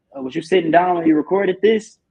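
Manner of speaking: snide, mocking, sarcastic, needling tone. Retelling how Marv teased a recording: imitating Marv's sarcastic tone. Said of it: "in a sarcastic, asshole-ish way".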